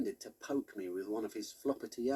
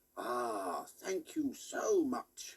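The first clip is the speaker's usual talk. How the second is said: growled out with a swooping pitch. Narrator making Walter Bear sit up and speak, deep growly Walter Bear voice. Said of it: "I made him say in a deep growly voice".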